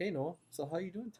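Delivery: put-on high-pitched, coaxing baby talk. Showing how people talk to a baby with wide expressions; baby talk. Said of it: "do the like baby talk".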